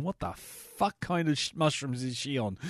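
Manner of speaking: musing, inner-thought voice. Joking about a dog wandering around a farm: voicing Toto the dog. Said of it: "a dog just wanders about going".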